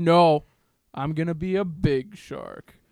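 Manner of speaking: menacing, stern, intimidating, unbudging tone. Retelling a cousin insisting on being a big shark: imitating someone saying it intimidatingly. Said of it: "he would say it kind of intimidatingly".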